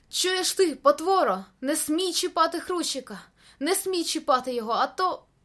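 high, enraged, furious yell bursting out. Narrator reads a character leaning out from behind a stone at a monster, shouting in rage. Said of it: "закричав".

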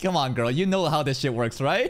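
ordinary delivery

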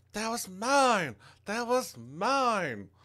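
very high screaming with mine stretched long. Voicing a wounded enemy in a fight: screaming. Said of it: "she's kinda screaming".

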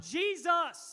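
very loud, high, begging shout. Speaker retelling a Bible passage acts out the beggar crying out, loudly. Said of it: "I'm not trying to hurt your ears. I'm sorry, I'm loud anyway".

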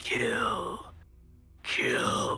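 guttural whisper. Describing an anime movie, voicing what the characters hear: guttural whisper. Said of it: "almost like a whispering like guttural sound".

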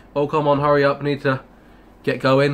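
ordinary talk

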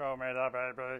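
mechanical robot droid voice. Voicing droids programmed to get the child, robot voice. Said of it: "Except in a robot voice".

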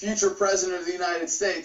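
ordinary delivery

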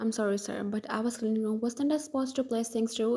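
ordinary delivery, nothing marked

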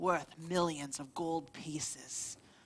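slow, hushed, secretive whisper.

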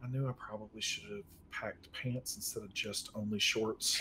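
low, grumbling mutter under the breath. A game character searching for warmer clothes, muttering under his breath. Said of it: "muttering under his breath the whole time".

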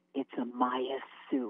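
slow, drawn-out whisper, close in the ear. Retelling what he whispered in her ear mid-scene: imitating a whisper. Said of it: "he whispers in my ear".

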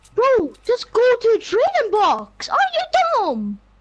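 irritated, impatient, angry, high-pitched outburst. Pushing the other trader to use the trading box: angry. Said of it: "Why are you so angry?".

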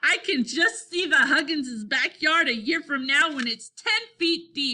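gasping through laughter. Narrator reads Scooter laughing along with the boys, gasping with laughter. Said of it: "gasped Scooter".

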